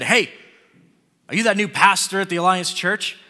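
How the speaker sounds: forceful, aggressive, angry, confrontational delivery. Retelling how a guy confronted the speaker while sitting down to lunch, imitating an aggressive, angry guy. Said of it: "really aggressive, you know, angry sounding way".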